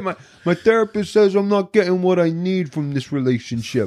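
put-on New York Italian accent. Retelling a character's line from a film: New York Italian accent. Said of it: "the New York Italian".

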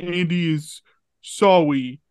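put-on little baby voice. Discussing a TV episode, one speaker retells its cold open in Andy's baby talk voice. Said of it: "he is like talking in baby".

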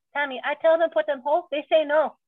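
high-pitched, sassy put-on woman's accent. Imitating how she would probably answer tammy, in her accent. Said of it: "like in her accent".

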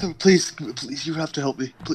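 desperate pleading, begging tone. Voicing a sailor following dockworkers: pleading sailor. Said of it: "He's just kind of following them and pleading".

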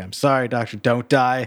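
mock panicked, pleading tone. Retelling a scene where a character tries to save a doctor: imitating someone panicking.

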